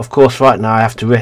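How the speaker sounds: plain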